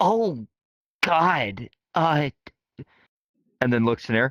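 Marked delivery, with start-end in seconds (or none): 0.0-2.3 high-pitched river otter character voice. Voicing a river otter who sees an injured party member: voicing a river otter. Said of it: "and he notices Nea and goes".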